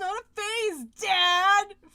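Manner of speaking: very loud, screamed outburst. Imagining a character slamming a door at a father figure: imitating Kyo screaming. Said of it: "slammed a door at some point and screamed".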